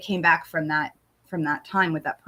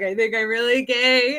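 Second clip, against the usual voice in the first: high sobbing, snot-crying, barely getting words out; 5 semitones higher than usual. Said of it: "I was like snot ball crying".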